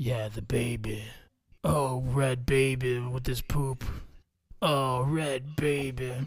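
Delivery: very low, very slow, deep tough-guy movie voice. Quoting a movie scene as an impression: Vin Diesel impression. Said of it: "My Vin Diesel's not that good".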